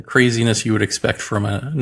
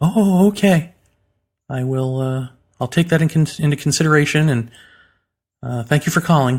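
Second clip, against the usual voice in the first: rushed, hasty, hurried, pitched-up delivery; 5 semitones higher than usual. Speaker retelling the mother's reply on the phone, mimicking her hurried rush. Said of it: "very quickly, very hurriedly".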